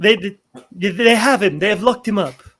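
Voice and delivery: fast, rushed, stuttering speech. Voicing a frazzled character returning to camp: Talius impression. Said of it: "my best, uh, Talius impression".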